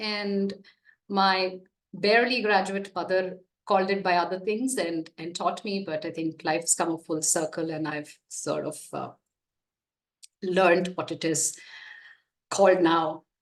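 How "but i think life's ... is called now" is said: emotional, choked-up speech, words catching and halting. Giving a talk about what their mother taught them, choked up, words not coming. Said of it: "I'm still choking, so words are not coming very easy".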